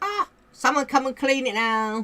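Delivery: squeaky, very high cat voice. Retelling how the cat calls after kicking its litter: voicing the cat. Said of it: "and he's gone".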